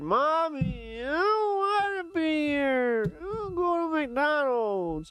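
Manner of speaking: put-on very high, very slow little kid whining. Complaining about a boring video, whining like a little kid. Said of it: "I'm like a little kid".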